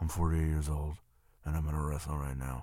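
very low, soft, deep rumble. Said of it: "In that real low, rumbly".

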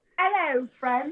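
put-on, fake British accent. A young caller on a call-in show greets the host in a fake british accent. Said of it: "A fake British accent".

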